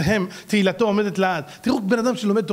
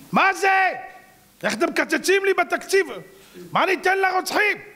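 very high, drawn-out, mocking griping; 9 semitones higher than usual. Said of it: "אבו מאזן התלונן".

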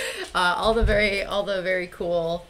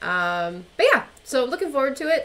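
ordinary delivery

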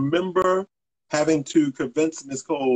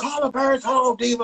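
high, screamed call-out. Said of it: "And I screamed out".

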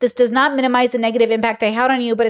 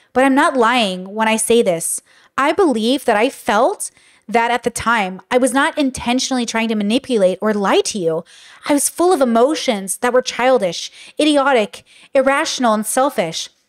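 ordinary talk

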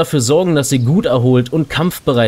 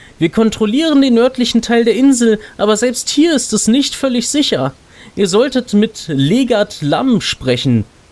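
friendly put-on elf lady voice, pitched up; 9 semitones higher than usual. Reading a game's quest text aloud for the audience, voice the nice elf lady. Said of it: "Wir wollen mal dieser netten Elfendame, die uns hier in der Introsequenz so nett zugewunken hat".

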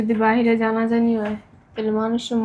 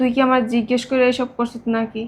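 ordinary delivery

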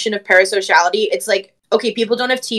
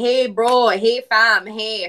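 Jamaican Canadian accent. Answering people who ask what the accent is, demonstrating a Jamaican Canadian accent. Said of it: "it's very obviously just Jamaican Canadian".

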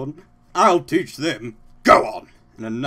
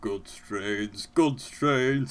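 muttering, mumbling; 3 semitones lower, 6 dB quieter than usual. In a story being read aloud, a character speaks, muttering. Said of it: "he muttered".

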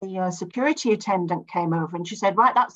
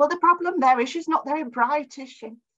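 loud, high-pitched stage whisper; 8 semitones higher than usual. Quoting Mum's remark after the explanation, in a very loud voice. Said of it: "Mutti says in this very loud voice".

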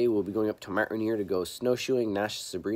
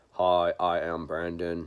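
lifeless, very slow, flat monotone drone; 5 semitones lower than usual. Showing viewers the narration style to avoid, in a flat monotone. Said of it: "monotone yuck".

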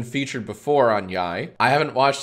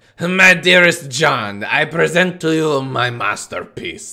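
put-on French accent, slow and drawn out; 2 semitones higher, 3 dB louder than usual. Answering a request to read a comment in a french accent: attempted french accent. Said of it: "in a French accent".

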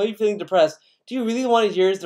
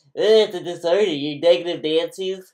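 put-on nasally voice. Speaking to DSP, acting out what he should say, in a nasally voice. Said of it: "you should go in a nasally voice".

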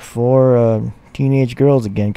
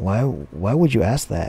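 put-on soft, disgusted, grossed-out tone; 5 dB quieter than usual. Telling a story, the speaker quotes a girl answering a boy's question, imitating a disgusted girl. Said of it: "the girl was all disgusted".

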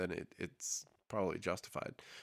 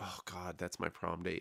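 put-on frustrated and upset tone, quieter; 7 dB quieter than usual. Retelling a TV scene, quoting a character: imitating frustrated and upset. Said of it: "really, like, frustrated and upset about it".

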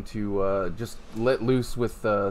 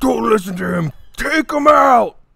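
loud yell. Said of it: "the Whippet yell".

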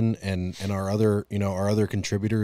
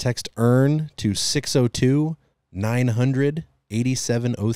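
spoken at a slightly slower pace; 3 semitones higher, 4 dB louder than usual. Repeating a text number so viewers can write it down: saying it a little slower. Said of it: "say it a little bit slower".

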